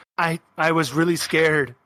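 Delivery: tearful, halting voice on the edge of crying. Voicing a frightened character who is crying a little. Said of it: "she's actually crying a little".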